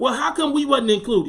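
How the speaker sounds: usual speaking voice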